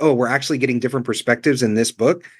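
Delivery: plain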